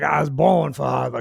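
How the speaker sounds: put-on raspy, gravelly Mississippi accent. Quoting a favorite line from a moonshine-drinking storyteller, gravelly Mississippi accent. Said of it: "It's a gravelly voice, you know, kind of, kind of Mississippi".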